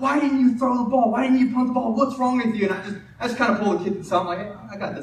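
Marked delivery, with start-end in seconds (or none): 0.0-2.7 high, angry, put-on coach yell. Retelling how a first-year coach yelled at a kid, imitating the yelling. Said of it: "He's like yelling at him".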